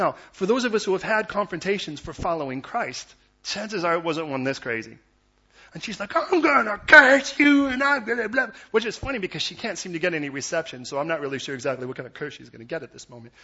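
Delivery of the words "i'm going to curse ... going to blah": acted furious woman's shriek, very loud, very high. Retelling a woman's confrontation over following Christ: imitating an angry woman. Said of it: "She was clearly quite angry".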